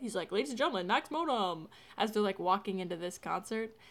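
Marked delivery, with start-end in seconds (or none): 0.3-1.7 emcee-style announcing delivery. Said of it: "Finneas does, like, an announcing bit".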